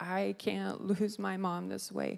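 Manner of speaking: sobbing, desperate crying out through tears. Retelling praying aloud while driving home sobbing: retelling crying out. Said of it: "I was just crying out".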